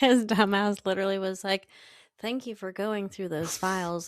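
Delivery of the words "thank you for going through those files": mock rehearsed, flat, mechanical robotic monotone. Retelling Angel thanking Cordelia for the files: monotone robotic Angel voice. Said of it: "so monotone and robotic".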